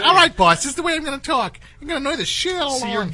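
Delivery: very high, loud, shrill, amped-up excited voice. Answering the boss's request for a new voice, excited, high-pitched voice. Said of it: "Want to be more excited and high-pitched?".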